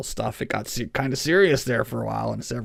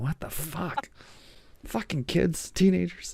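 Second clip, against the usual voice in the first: pitched-up grumble muttered under the breath; 7 semitones higher than usual. Retelling a background character's reaction: imitating muttering under one's breath. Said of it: "mutters under his breath".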